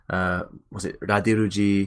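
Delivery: mock French accent with clearly shifted voice.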